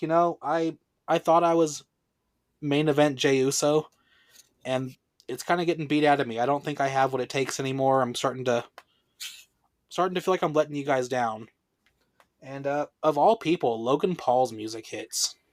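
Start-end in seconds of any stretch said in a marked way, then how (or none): none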